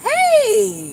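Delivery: smiling, genuinely glad, very high, drawn-out happy voice. Showing that people can hear a smile in your voice: warm smiling 'hey'. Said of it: "I'm really happy to see you. I'm really smiling".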